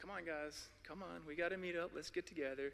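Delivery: very quiet, hushed voice. Retelling how someone called the scouts together, in a very low, quiet voice. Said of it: "in a very low voice".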